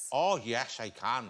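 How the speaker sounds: imitated Northern Irish accent. Asked about doing accents, a Southern Irish speaker answers in a Northern Irish accent. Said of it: "That's the Northern Irish".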